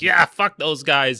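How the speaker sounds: loud, high outburst. Retelling Ethan's call-in about leftists on Twitter: imitating Ethan. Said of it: "He's like".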